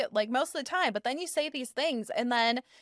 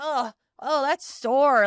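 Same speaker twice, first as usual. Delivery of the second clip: mock whiny, complaining voice, getting louder; 6 dB louder than usual. Retelling what a complaining patient says: imitating a whiny, complaining patient. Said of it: "he's so whiny and complaining".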